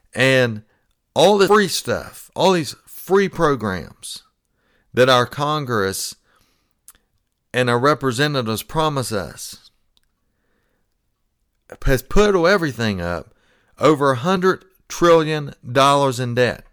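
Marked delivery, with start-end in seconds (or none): 1.1-4.2 free stressed, high and slow. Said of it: "I keep emphasizing that word free".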